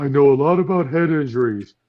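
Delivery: cartoon sidekick character voice. Quoting a cartoon scene: Patrick Star impression. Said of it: "where Patrick was sitting there and saying".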